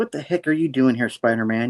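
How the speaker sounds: ordinary delivery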